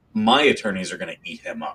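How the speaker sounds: ordinary delivery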